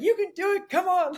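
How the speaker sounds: high, chipper, cheery encouraging tone.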